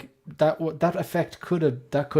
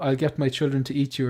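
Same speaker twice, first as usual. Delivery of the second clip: ordinary delivery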